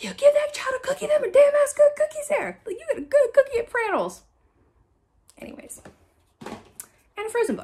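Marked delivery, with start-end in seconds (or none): 0.0-4.2 loud, high-pitched, scolding yell. Retelling a reaction to a tv episode about a refused cookie: imitating herself yelling at the screen. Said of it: "I'm yelling at the com-, screen".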